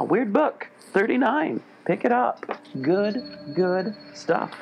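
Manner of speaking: hyped, excited, high-pitched ad-style delivery.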